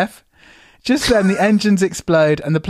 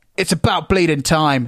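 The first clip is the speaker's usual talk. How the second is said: put-on irritable snapping voice. Reading out a screenplay scene, voicing a rude businessman: snapping. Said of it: "the man snaps".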